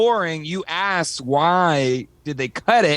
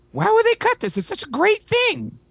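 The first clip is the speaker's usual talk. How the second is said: very high, made-up put-on dad-style voice. Retelling what Colleen said about a cut film scene, imitating Colleen. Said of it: "are you doing the my dad voice for me?".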